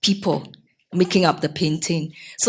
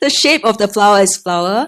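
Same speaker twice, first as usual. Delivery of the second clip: raised volume, louder; 2 semitones higher, 5 dB louder than usual. Repeating an answer when the other speaker asks for it louder: louder. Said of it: "Say it louder".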